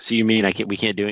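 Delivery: mock angry, acted getting-mad tone. Retelling how the wife reacts to football season: imitating someone getting mad. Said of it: "She gets all mad".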